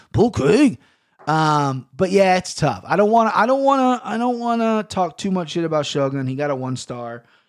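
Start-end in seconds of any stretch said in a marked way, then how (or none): 0.1-0.7 convincing, spot-on put-on Scottish accent. Talking about a fighter's accent, doing a Scottish accent. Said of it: "that's a fucking spot-on Scottish accent".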